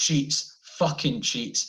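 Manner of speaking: put-on yelled accusing tone from the background.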